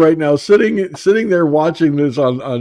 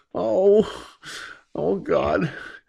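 whispered, breathy, laughing too hard to talk; 3 semitones higher, 8 dB quieter than usual. Reacting to a funny image, laughing hard while talking: laughing while talking. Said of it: "My sides are starting to ache from laughing".

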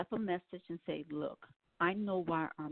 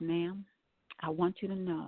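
very quiet, hushed voice. Quoting a man's words at the end of a conversation, retelling his very quiet speech. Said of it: "he said to me very quietly".

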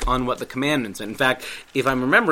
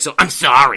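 loud, insincere, rude apology; 9 dB louder than usual. Showing an apology that isn't enough, a rude-sounding I'm sorry. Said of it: "saying I'm sorry in a rude voice too. Like".

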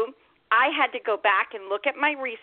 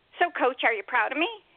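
dry, fast, sarcastic, teasing delivery. Retelling the end of Jenny's long Skype message to her coach, in her sarcastic tone. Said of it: "in her sarcastic Jenny tone".

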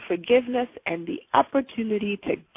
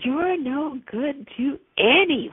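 put-on angry, rasping, accusing voice, higher pitch; 4 semitones higher than usual. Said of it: "this angry, rasping, accusatory voice in my head".

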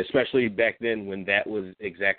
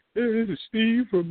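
put-on stupid-sounding voice, pitched higher; 14 semitones higher than usual. Imitating how a friend introduces himself on calls: Josh's stupid-ass voice. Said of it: "he does that stupid-ass voice".

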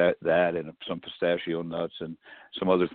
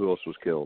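normal talking voice

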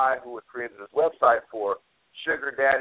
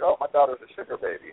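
put-on proud parent voice. Imitating a parent bragging about a daughter: imitating a proud parent. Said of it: "I'm sure you're very proud that you're like".

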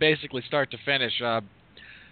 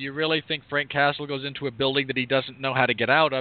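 plain

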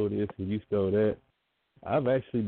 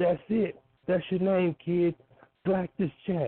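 put-on very high-pitched, thick, heavy New Jersey accent; 9 semitones higher than usual. Retell how Bill DeMott laughed and gave you your name, in a thick New Jersey accent. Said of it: "in the most New Jersey accent that he could possibly have".

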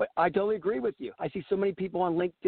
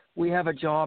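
dull, flat, lifeless monotone drone. Mocking how recruiters announce jobs: imitating a monotone recruiter. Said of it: "and it's monotone".

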